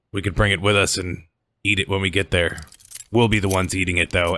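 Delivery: smug, authoritative guard character voice. A game master voices a guard handcuffing the player's character, city guard character voice. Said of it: "and you see a group of 3 guards, / the guard looks at you and he's like".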